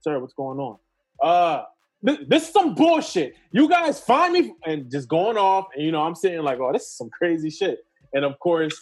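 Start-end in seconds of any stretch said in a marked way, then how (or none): 0.0-1.6 very slow, soothing, composed and calm voice. Retelling the chief coming out to an angry man: imitating a nice, calm voice. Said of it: "nice and calm".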